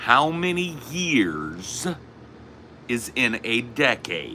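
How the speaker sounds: put-on very slow, every word stressed, swooping, childlike, condescending. Showing how someone puts stress on words as if to children; stressing words like to children. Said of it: "Putting stress on the words like they're children".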